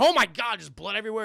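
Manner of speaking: loud, all-out screaming outburst. Retelling a movie scene where Joe Pesci gets shot, imitating Joe Pesci screaming. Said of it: "he's just screaming his fucking head off".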